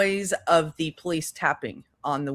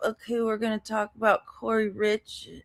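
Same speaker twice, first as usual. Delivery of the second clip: mock dazed voice, higher; 6 semitones higher than usual. Imitating a streamer who was out of it the entire stream: imitating someone sounding out of it. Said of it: "she was sounding like this".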